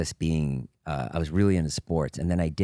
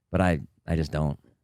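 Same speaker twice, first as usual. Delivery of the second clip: ordinary talk, nothing marked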